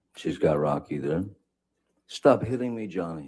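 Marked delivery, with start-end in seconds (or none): 2.1-3.3 acted, freaked-out, distressed, high-pitched cry. Retelling a fight, the speaker mimics Heard screaming at him, mock upset scream. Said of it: "she's screaming in in her best".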